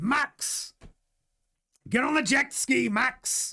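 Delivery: drawn-out pirate voice. Imagining Toto Wolff on holiday with Max Verstappen, Toto Wolff pirate voice. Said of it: "like a pirate".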